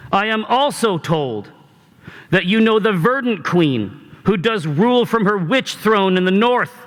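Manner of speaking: loud projecting voice. Voicing a young woman calling up to a rampart: loud projecting voice. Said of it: "her voice projects significantly greater than one might expect".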